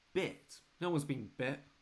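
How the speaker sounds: baffled, confused, puzzled tone. Voicing a tired nurse questioning a visitor: confused.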